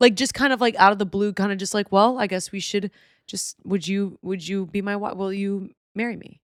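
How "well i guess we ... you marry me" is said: very nonchalant, casual, offhand, slightly stumbling. Retelling how a contestant proposed this season: imitating a nonchalant proposal. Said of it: "Very nonchalantly".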